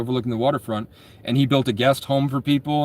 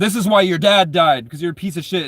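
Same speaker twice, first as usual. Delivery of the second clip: acted-out furious, angry yell; 5 semitones higher, 5 dB louder than usual. Recounting a rich kid yelling at him, imitating the kid's angry yell. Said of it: "he's like yelling at me".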